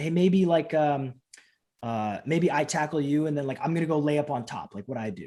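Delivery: ordinary delivery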